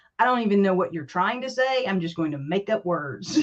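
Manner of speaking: ordinary talk, nothing marked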